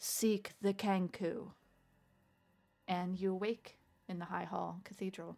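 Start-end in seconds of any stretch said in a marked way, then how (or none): 0.0-1.5 thunderous, booming, resounding voice. Narrating the last word heard from a voice among prayers, booming voice. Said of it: "the booming voice".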